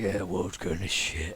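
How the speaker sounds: rough, gruff tone. A human speaks up from the back: gruff voice. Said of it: "hear a gruff voice from the back".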